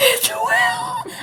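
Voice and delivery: very high, eerie, unsettling voice. Retelling phone calls from a boss after throat cancer: imitating Will's scary voice. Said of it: "it's the scariest thing in the world".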